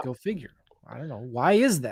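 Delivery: sarcastic, fake-confused voice. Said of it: "I'm being sarcastic here".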